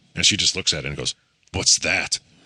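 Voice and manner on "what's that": put-on dead-serious, suspicious child's voice. Retelling a kid's question about the bidet: imitating a serious tone. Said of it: "in a serious tone".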